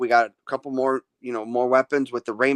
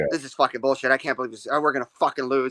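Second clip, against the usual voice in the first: angry voice. Retelling how a friend reacted during a game: imitating angry Tommy. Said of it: "Tommy was pissed".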